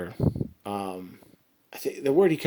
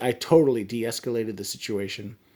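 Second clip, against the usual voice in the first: ordinary delivery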